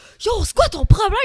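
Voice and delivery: acted furious blow-up, very loud and high. Retelling confronting the person who took her sign in the crowd; retelling losing her temper. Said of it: "Je commence à péter une coche".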